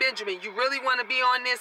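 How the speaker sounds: normal talking voice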